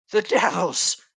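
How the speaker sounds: hissing hag voice. Narrator voices a hag's disembodied voice, in a hissing hag voice. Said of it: "hisses the hag's disembodied voice".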